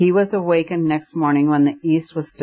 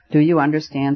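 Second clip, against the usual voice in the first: ordinary delivery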